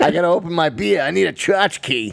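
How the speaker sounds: put-on Boston accent. Joking about needing a tchotchke to open a beer: put-on Boston accent. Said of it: "This is the Boston, fucking Boston accent".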